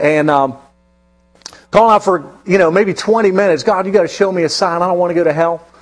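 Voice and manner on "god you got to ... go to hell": put-on tearful, crying voice. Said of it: "calling out to God for a sign".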